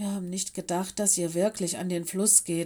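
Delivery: ordinary delivery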